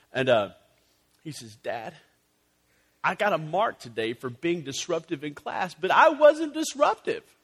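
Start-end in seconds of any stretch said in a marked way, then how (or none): 1.7-7.3 put-on upset voice, close to crying. Retelling a son's worried confession about a school mark: imitating someone near tears. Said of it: "literally he's almost on the verge of tears".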